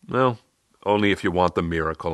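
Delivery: dry, straight-faced. The narrator answers a man's question, deadpan. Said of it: "I deadpanned".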